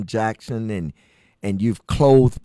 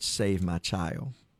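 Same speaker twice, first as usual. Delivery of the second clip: put-on faint voice, quieter; 3 semitones lower, 10 dB quieter than usual. Retelling what their mother said when doctors could not save both, imitating a faint voice. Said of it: "in her faint voice".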